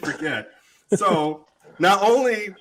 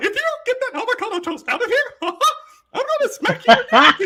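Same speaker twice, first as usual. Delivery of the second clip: very high, squeaky cartoon voice; 4 dB louder than usual. Retelling what was said to someone offering avocado toast: Mickey Mouse voice. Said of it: "That's when the Mickey Mouse came out".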